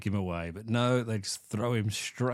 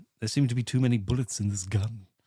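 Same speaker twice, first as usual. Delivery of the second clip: put-on posh cartoon baby voice; 3 dB louder than usual. Retelling a film scene, quoting a villain: Stewie from Family Guy voice. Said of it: "Sounds like Stewie from Family Guy".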